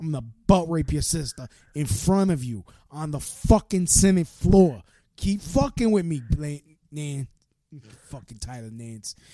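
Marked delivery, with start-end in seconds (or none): 0.0-7.3 put-on Brooklyn accent throughout. Imagining himself as president, addressing someone on the Senate floor: put-on Brooklyn accent. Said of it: "that's some authentic Brooklynese right there".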